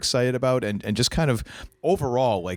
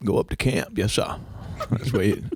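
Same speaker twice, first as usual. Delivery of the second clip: impersonated Maine accent. Reminiscing about summers up at camp, doing a Maine accent impersonation. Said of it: "any chance to do my Maine impersonation".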